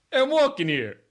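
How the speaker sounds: very loud, very high New York street shout. Speaker trying accents for the others, doing a best New York accent. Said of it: "I'll do my best New York accent here".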